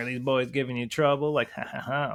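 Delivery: mock sarcastic, edgy tone. Retelling what a lady at the campground said: imitating someone being sarcastic. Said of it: "being sarcastic".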